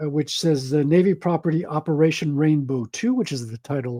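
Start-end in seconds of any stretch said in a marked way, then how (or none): none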